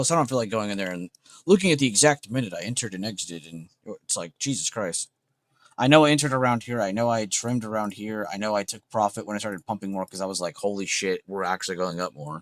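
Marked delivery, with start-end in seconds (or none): none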